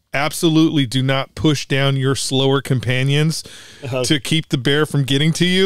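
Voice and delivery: ordinary delivery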